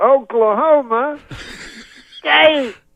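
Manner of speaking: very high, slow, stretched-out announcer-style delivery. Retelling how a performer on stage announced a team name: retelling saying it slower. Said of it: "And then he says it slower".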